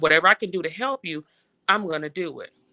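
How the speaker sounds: normal talking voice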